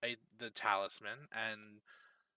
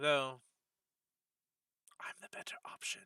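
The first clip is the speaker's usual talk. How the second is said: hushed whisper; 3 semitones higher than usual. Voicing a council contact who privately tells the players: whispering. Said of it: "she whispers to you".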